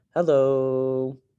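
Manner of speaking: hello stretched way out, long and held. Imagining someone saying a word and just holding it: held-out hello. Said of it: "they just hold it like".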